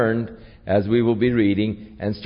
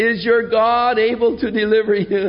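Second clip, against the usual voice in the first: put-on lamenting cry, much higher, louder, slower; 10 semitones higher than usual. Speaker retelling the scripture story of the king calling to Daniel: retelling a lamenting cry. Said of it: "sort of in a lament".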